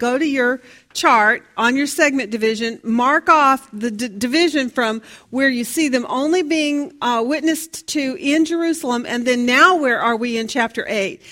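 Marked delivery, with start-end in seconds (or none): none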